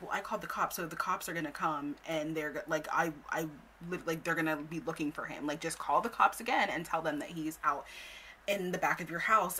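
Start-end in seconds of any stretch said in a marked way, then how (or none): none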